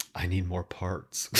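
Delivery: mock very quiet, low, dead-flat deadpan delivery. Recounting a scene where a woman looks at the camera; imitating a deadpan line. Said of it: "she just looks deadpan at the camera".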